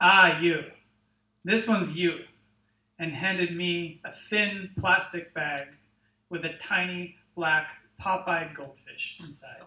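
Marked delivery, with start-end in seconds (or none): 0.0-2.2 gruff tone, much louder. Narrator voicing the company president handing over an evaluation, gruff voice. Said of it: "the president called out in his gruff voice".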